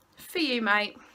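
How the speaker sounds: ordinary delivery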